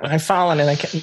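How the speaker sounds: high-pitched nerdy character voice. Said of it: "I want it in the Steve Urkel voice".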